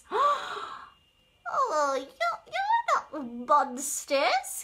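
giggling, high and sing-song, very slow, drawn out. A turtle greets seahorses it thought were monsters, giggling. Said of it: "giggled Turtle".

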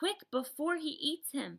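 high, loud, urgent, horror-struck cry. A girl on a giant's palm watches another giant seize a soldier: crying out, horror-struck. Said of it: "she cried".

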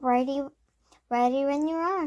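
usual speaking voice

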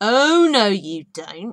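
very loud, very slow, booming, drawn-out growl. Reading Lady Boulder's reply to someone told to push their way out; growled. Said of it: "growled Lady Boulder".

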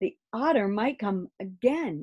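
ordinary delivery, nothing marked

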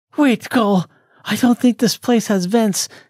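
eager excited explaining. Reading Amanda answering Cole's question, with excitement. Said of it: "responded Amanda with excitement in her voice".

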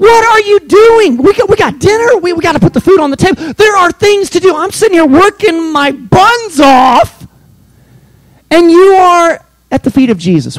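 very high, swooping, livid, tantrum-like rant. Retelling the story of Mary and Martha, acting out livid Martha. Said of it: "She's livid. She throws a fit".

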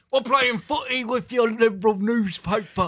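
loud put-on British accent. Joking with friends about a British Ben Shapiro: British Ben Shapiro impression. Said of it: "That's British Ben Shapiro".

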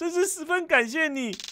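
tearful weeping, voice very high. Thanking the companion who promised to go wherever they go, crying. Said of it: "别哭了啦。".

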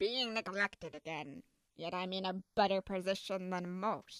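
sulky, sarcastic grumble, muttered quietly. Reading a story, the narrator voices Waluigi as he walks on: Waluigi grumbling to himself. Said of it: "with the lanky purple man being disgusted as [name] let out a huge sigh of relief as she giggled. / with the lanky purple man being disgusted as [name] let out a huge sigh of relief as she giggled. /".

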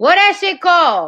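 shouting. Unable to recall what something is called, asking about it: shouting. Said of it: "Why are you shouting at me now?".

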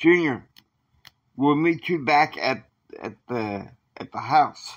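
plain

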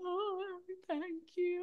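high, choked-up, tearful crying. Retelling thanking kind people on stage: imitating own crying. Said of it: "I crying like".

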